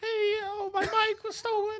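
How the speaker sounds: put-on very high, small child's voice. Asked to redo his childhood call to police about a stolen bike, imitating his childhood voice. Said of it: "Give them the [name] voice calling this police".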